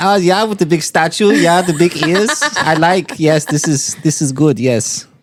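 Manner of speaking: put-on German-sounding accent. Trying a Swiss accent in a group conversation, coming out German-sounding. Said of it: "That's German, my guy".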